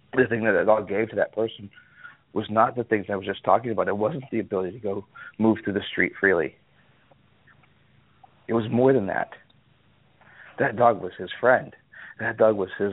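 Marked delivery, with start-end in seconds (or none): 0.2-11.8 choked up, voice catching with emotion. Describing what a dog meant to the man who owned it, choking up a bit. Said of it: "I'm choking up a bit here".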